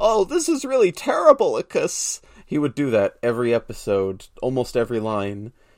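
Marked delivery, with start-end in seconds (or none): 0.0-2.2 very high, shrill, loud, swooping, sing-song cartoon voice. Retelling how Kid Icarus from Captain N talked: imitating Kid Icarus from Captain N. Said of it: "he would suffix all of his phrases with "icus."".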